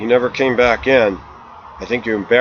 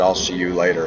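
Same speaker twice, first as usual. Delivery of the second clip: severe, dead-serious, very stern, low voice; 4 semitones lower, 3 dB quieter than usual. Telling of saying goodbye to a woman, retelling a very stern goodbye. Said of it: "in a very stern voice".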